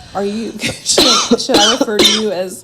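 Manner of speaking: loud, laughing while talking, words broken up. Picturing how they would ask someone a question, laughing while talking. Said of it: "I'm sorry, I'm laughing".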